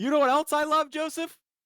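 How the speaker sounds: high, sarcastic, sugary tone. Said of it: "That's sarcasm".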